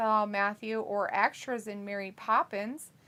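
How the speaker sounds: plain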